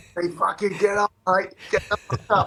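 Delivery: put-on shrill, very high-pitched screaming. Retelling a coach yelling at a resting player: imitating someone screaming.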